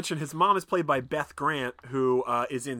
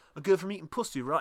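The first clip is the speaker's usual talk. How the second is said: plain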